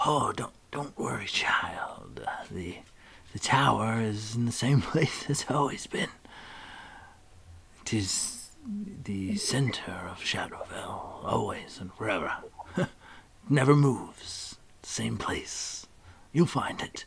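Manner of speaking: whispering under his breath. Storyteller voicing a character who turns away, whispering under his breath. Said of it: "turns and whispers under his breath".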